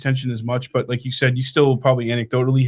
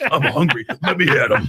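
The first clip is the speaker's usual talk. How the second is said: unhurried, slow, drawn-out, deliberate voice. Joking about a politician calling out a rival: imitating Chris Christie. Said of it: "Chris Christie".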